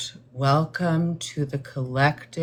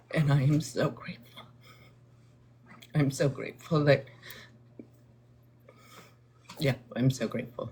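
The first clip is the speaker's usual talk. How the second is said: tearful crying, much quieter; 5 dB quieter than usual. Speaker addressing an audience, crying. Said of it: "I am crying because it is a gift".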